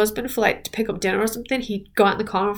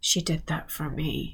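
slow, very soft whisper under the breath; 6 semitones lower, 11 dB quieter than usual. Retelling what a man in a video whispered to himself: imitating Steve whispering. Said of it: "you can hear Steve whispering to himself".

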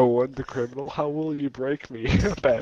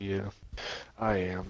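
gloomy, lifeless, low, flat, depressed monotone; 6 semitones lower, 10 dB quieter than usual. Answering whether they are playing Sims: monotone and depressed. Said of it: "It's very monotone and depressed".

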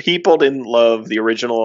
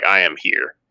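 bold, grand, heroic, dramatic delivery; 4 semitones lower than usual. Pretending to draw a sword and point it: dramatic declaration with a sword. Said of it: "if I was in a dramatic moment".

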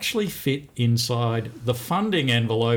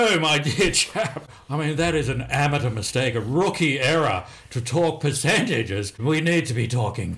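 very pompous, self-important, lofty delivery; 3 semitones higher than usual. A speaker redoes another's point to show a much more pompous tone. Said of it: "with a much more pompous tone of voice".

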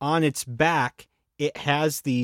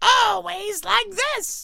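cartoon villain voice, much higher. Speaker shows a friend who doesn't remember the cartoon how he talks: Cobra Commander impression. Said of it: "He's like".

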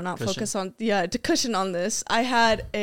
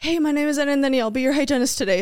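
tense, nervous, shaking voice, higher; 5 semitones higher, 4 dB louder than usual. Retelling greeting a patient as their hygienist: imitating own tense, shaking voice. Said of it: "I'm so tense in my voice".

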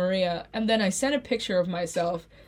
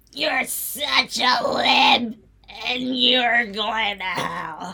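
put-on, fake chain-smoker's voice; 3 semitones higher, 4 dB louder than usual. Teasing another speaker as a lib: put-on smoker's voice. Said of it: "I'm trying to get my smoker's voice".

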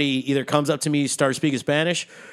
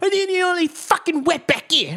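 very high, fake, put-on British accent. Retelling a frustrated man's racist outburst at the speaker, in a put-on British accent. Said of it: "I'm making him sound more British than Australian".

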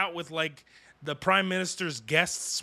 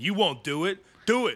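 put-on berating harangue, yelled. Describing the suicide hotline as people yelling at you, retelling a yell. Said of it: "people just yelling at you".

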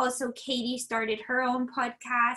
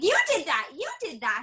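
mock screaming, raised pitch; 4 semitones higher than usual. Retelling watching a reality show and reacting: imitating screaming at the TV. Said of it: "screaming at the T V".

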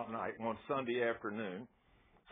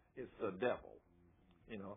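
ordinary talk

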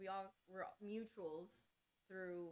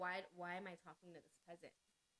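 plain

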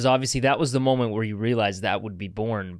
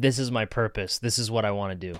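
ordinary talk, nothing marked

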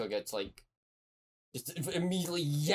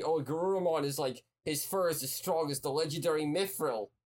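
plain

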